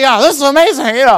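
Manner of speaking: exaggerated nerd voice, high-pitched and fast.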